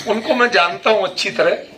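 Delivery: ordinary talk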